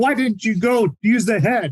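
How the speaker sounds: high-pitched drill-sergeant style yell. Retelling how the drill instructor yelled at a recruit: imitating a drill instructor yelling. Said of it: "he starts yelling".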